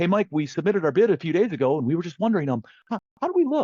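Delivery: play-acted weak, pleading voice. Recalling calls from suppliers about their bids, the speaker imitates a stressed, desperate supplier. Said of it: "high stress voice, weak, desperate".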